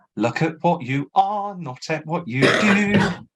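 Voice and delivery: put-on London Cockney accent. Describing a British production of George, quoting Jenna Russell: Jenna Russell Cockney accent. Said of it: "Cockney, and she goes".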